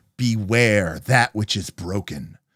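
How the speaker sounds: drawn-out, slow, spooky, ominous reading. Retelling a game master's warning carved on a doorway: imitating Aaron's scary voice. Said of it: "saying it, like, in, like, a really scary way".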